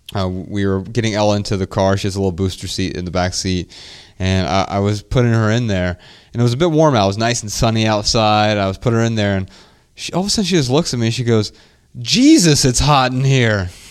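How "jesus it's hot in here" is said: very slow, drawn-out, grown-up motherly cadence. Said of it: "she said it with the same exact cadence that her mom would use".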